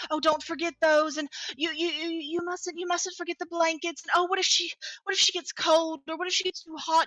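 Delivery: flustered, frantic, high and loud, tripping over words. Narrating to the players, voicing their mother Adira, frantic Adira voice. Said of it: "kind of frantic".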